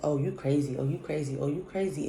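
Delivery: normal talking voice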